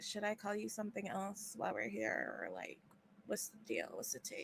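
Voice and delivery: soft, breathy whisper, barely voiced. At the table, Nina turns to her companion and asks, whispering. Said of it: "and then like Nina whispers".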